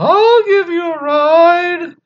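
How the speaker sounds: strange put-on voice, very high and very slow. Retelling a ghost story, quoting the driver: imitating a weird high voice. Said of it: "this weird high voice".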